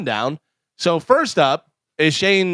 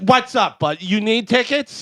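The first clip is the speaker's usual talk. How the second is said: slow, irritated, angry-sounding delivery; 6 semitones higher than usual. Retelling how a text from Bobby first seemed: imitating Bobby sounding angry. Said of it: "I read the text angry".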